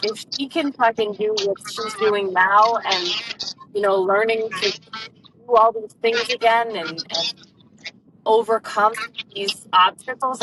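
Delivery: plain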